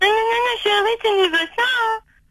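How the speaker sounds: mocking singsong in a very high voice.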